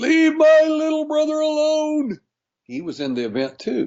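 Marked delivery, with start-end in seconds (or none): 0.0-2.2 play-acted, very high, repeated screaming. Recounting what a woman screamed during her event: imitating someone screaming. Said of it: "she kept screaming".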